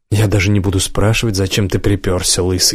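plain

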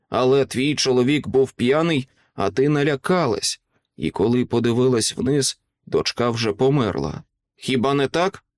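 ordinary delivery, nothing marked

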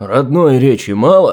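thundering voice. The sorcerer Efrem scolds Gleb for using foreign words: thundering. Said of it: "гремел Ефрем".

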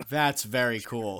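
sarcastic, mock enthusiasm. Showing what a party makes one feel: sarcastic. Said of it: "that's sarcastic".

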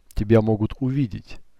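ordinary delivery, nothing marked

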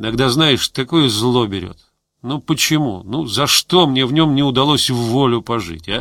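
ordinary delivery

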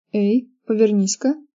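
plain reading voice

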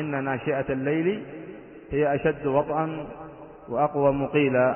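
usual speaking voice

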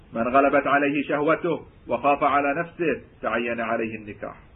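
plain

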